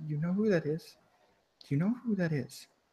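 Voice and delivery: hushed, very quiet half-whisper. Voicing the mistress speaking quietly to you, half-whispering quietly. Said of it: "whispers like quietly to you".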